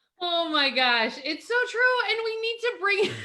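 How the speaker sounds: talking through giggles. Responding to the other speaker, giggling while talking. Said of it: "I'm just giggling".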